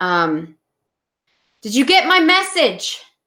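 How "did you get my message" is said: high, carrying shout. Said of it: "and I shout".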